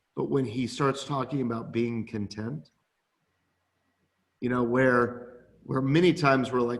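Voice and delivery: normal talking voice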